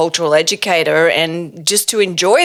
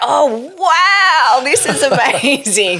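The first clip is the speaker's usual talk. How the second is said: put-on awed wow, drawn out, high and very slow; 8 semitones higher than usual. Retelling own reaction on finding a university: retelling own amazed reaction. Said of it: "so I was like".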